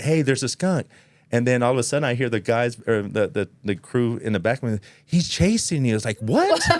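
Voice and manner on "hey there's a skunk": pitched-up, yelled called-out shout. Recounting spotting a skunk, retelling a yelled warning to the crew behind. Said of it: "but I yelled back".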